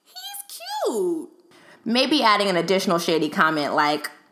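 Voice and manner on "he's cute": very high-pitched, light, sweetened-up voice. Acting out a homegirl's approving reply about a guy: higher pitched voice. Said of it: "respond in a higher pitched voice".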